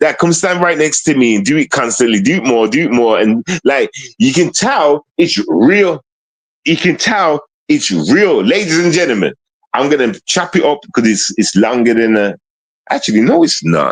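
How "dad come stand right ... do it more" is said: usual speaking voice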